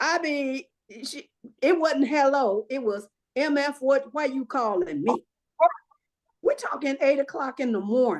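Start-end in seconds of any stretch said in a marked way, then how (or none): none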